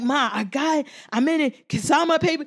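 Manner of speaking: put-on thrilled kid voice, bursting with excitement. Retelling a son coming home with news he got in: imitating son's excitement. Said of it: "And he was so excited".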